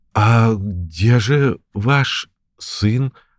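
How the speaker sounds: very slow, quavering, trembling voice. Reading a story, Jakob asks his father a question, trembling voice. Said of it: "дрожащим голосом спросил Якоб".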